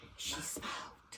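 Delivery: secretive, hushed whisper. Retelling how Mama answered about the bad woman: imitating Mama's whisper. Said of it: "she'd whisper".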